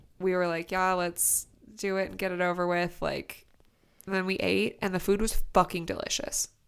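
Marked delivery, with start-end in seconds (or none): none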